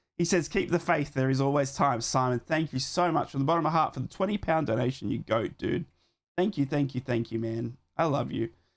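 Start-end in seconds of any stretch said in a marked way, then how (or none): none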